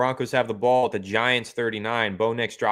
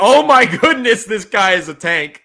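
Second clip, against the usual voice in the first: very high, very loud scream; 10 semitones higher, 11 dB louder than usual. Recounting an injured player getting up on the field, retelling a scream. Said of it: "he got up and he's screaming".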